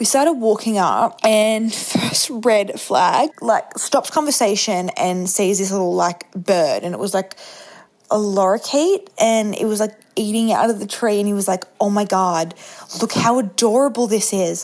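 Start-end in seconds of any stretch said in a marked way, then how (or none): 11.8-14.6 attempted, put-on Canadian accent. Retelling what he said on seeing a lorikeet, attempted Canadian accent. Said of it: "I'm trying to do a Canadian accent".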